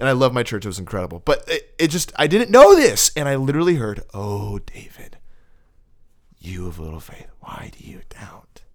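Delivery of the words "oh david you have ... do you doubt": hushed, breathy, menacing villain whisper. Retelling words he heard from God, in a voice like the Joker. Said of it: "You sound like the Joker".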